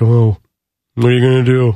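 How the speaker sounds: put-on beleaguered, put-upon voice. Imagining a sentient toilet that talks back: put-on beleaguered roommate voice. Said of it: "just sitting there like a beleaguered roommate".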